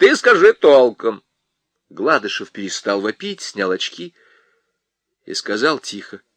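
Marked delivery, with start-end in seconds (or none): 0.0-1.2 shrill, loud, quarrelsome, nagging scolding tone. A wife snaps at her wailing husband, in a shrill, scolding voice. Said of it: "скандальным, визгливым голосом".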